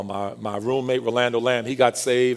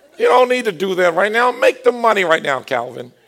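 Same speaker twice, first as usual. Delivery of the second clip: put-on New York-accented speech; 9 semitones higher, 7 dB louder than usual. Retelling what his attorney told him after he got saved, imitating Norman Blass's New York accent.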